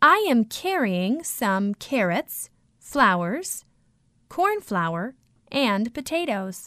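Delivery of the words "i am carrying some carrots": plain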